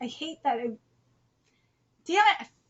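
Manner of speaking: pushing through mid-sentence, holding back tears. Reading the end-of-video requests, getting emotional: holding back tears. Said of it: "I'm trying not to cry".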